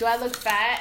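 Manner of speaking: ordinary delivery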